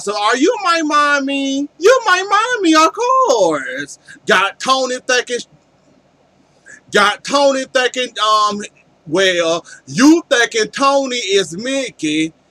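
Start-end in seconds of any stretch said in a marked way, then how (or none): 0.0-4.0 put-on woman's high, sing-song baby talk. Retelling how a woman was made to talk: imitating baby talk. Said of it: "You got the woman talking like a baby".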